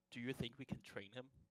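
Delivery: whispered aside. A tabletop player's character leans in to whisper in Hex's ear, whispering. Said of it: "I'm gonna whisper in Hex's ear".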